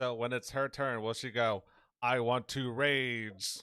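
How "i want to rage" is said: slow, voice-modded robot voice. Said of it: "That voice sounds so cool".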